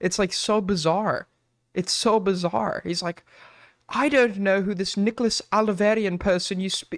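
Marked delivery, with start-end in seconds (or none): 3.9-7.0 very bad put-on British accent. Retelling how a man denied who he was, in Nicholas Rossi's bad British accent. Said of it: "like in like the worst British accent you've ever heard".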